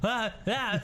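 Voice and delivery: very high, alarmed robot yelp.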